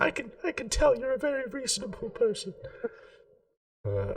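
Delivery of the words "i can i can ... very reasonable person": very high, piping put-on gingerbread-man voice. Retelling what a man said to them, in a gingerbread-man voice. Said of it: "it is gingerbread voice coming out of this person".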